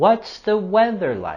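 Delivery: pitch falling on the word like. Pronunciation lesson, modeling a question with falling intonation at the end. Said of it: "we're going to have our falling intonation".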